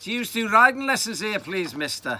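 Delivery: put-on loud Scouse Liverpool accent, pitched very high. Retelling his own question to a man, in his best Liverpool accent. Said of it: "I answered in my best Liverpool accent".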